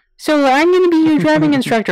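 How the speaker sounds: very high put-on secretary voice. Retelling what the driving instructor said, in her Ferris Bueller's Day Off secretary voice. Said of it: "she had that voice".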